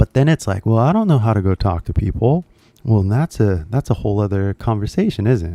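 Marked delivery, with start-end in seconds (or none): none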